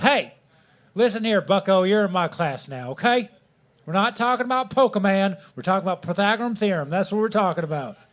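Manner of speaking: put-on Southern accent. Imitating a typical middle school math teacher, southern accent impression. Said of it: "He always had the most southern accent".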